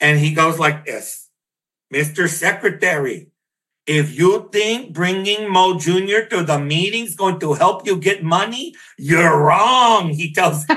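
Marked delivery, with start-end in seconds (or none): 1.9-10.1 put-on thick, laid-on Mexican border accent. Retelling his uncle speaking to the Secretary in a meeting, Kika's heavy Mexican border accent. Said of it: "the biggest, heaviest Mexican border accent you've ever heard".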